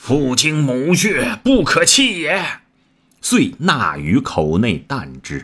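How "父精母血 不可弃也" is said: loud, high-pitched cry at full voice. Shot in the eye, a warrior pulls out the arrow and eyeball, loud shout. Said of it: "乃大呼".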